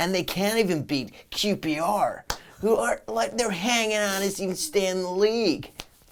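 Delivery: condescending, high, slow put-on American accent. Mocking american pundits' condescending tone about a team: mock american accent. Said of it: "what's the American accent about".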